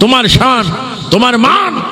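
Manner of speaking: impassioned, shouting preacher-style cry.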